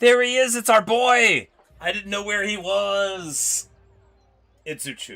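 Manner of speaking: shouting. Spotting uchu after not seeing him in ages, calling out to the guys: yelling. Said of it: "Sorry for yelling".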